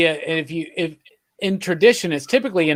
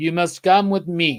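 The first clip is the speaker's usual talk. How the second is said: mock Czech accent, put-on Eastern European sound. Quoting an actor playing Death in a movie: imitating Death's Czechoslovakian accent. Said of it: "he's doing this Czechoslovakian accent".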